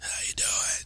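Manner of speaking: husky, breathy, hoarse put-on near-whisper. Showing how everyone in his game world talks, he uses a hoarse put-on voice. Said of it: "they all talk like this".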